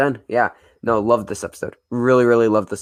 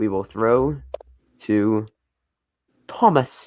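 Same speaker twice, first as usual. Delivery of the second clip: slow, fake put-on British accent. Introducing the next part of a discussion, in a put-on british accent. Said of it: "don't know why I did a British accent".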